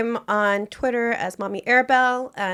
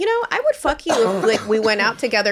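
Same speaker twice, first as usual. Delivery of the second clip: ordinary delivery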